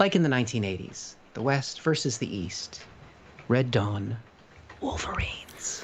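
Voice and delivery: speaking quietly and calmly. Describing a tense political summit, speaking quietly and calmly. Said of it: "I'm speaking quietly now, calmly".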